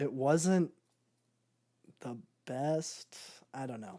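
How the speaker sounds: sounding disappointed. Going through songs they were anticipating, the speaker admits one fell short; disappointed. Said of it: "you can hear how disappointed I am in my voice".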